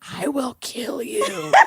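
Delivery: very slow, hushed, breathy whisper. Retelling waking up whispering after a nightmare: imitating a whisper. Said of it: "I guess I woke up whispering".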